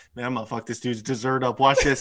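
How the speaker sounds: put-on whisper. Retelling what Chuck said at a restaurant table: imitating Chuck whispering.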